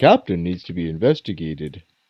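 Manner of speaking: very low, soft, nonchalant, offhand mutter under the breath. In a roleplaying game, Bruno remarks nonchalantly, almost under his breath. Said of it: "just almost under his breath".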